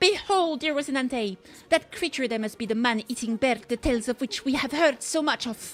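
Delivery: put-on Spanish accent. Playing a knight addressing Rocinante: put-on Spanish accent. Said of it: "she's getting that Spanish accent".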